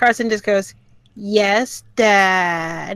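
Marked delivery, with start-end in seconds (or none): 1.1-3.0 cheeky, mocking, heavily sarcastic, drawn-out "Dad". Voicing a character who answers with mockery: heavily sarcastic, mimicking the accent. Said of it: "Heavily sarcastic and kinda mimicking the accent".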